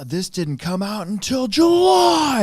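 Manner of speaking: loud dad-voice yell, rising, with "July" stretched. Retelling confronting a customer who lied about a purchase: imitating own past yell. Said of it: "And I, like, yelled at him".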